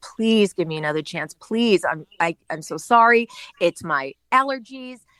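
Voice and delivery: mock, acted-out pleading and begging. Speaker retells begging for another chance at work, mock-pleading. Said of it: "And so I begged and begged and begged".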